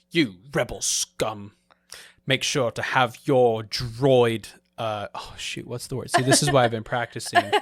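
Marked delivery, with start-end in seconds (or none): 0.1-4.4 put-on English officer accent. Practicing a role as an Imperial officer, in a put-on English accent. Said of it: "I've been brushing up on my English accent".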